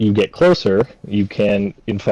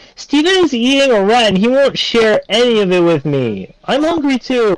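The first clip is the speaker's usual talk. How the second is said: fast, hurried, very high-pitched yelling; 5 dB louder than usual. Game master voices a character in the tavern, yelling quickly. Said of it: "she yells quickly".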